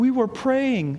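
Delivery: tiny, small, mousy little voice. A father tells the kids to go to bed, and one answers in a little mousy voice. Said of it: "this little mousy voice".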